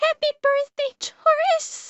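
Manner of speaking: crying, in tears. Speaker wishes someone a happy birthday and apologizes for crying; crying. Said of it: "I'm sorry I'm crying".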